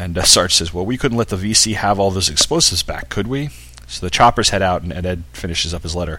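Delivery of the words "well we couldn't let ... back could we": ordinary talk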